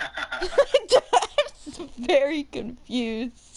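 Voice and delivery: very slow, laugh-filled, confused speech.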